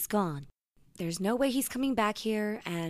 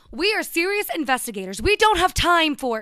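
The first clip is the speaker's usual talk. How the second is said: very loud, high-pitched shouting that breaks off; 8 semitones higher, 10 dB louder than usual. An investigator argues with a character who wants to help, yelling. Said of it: "You're yelling again".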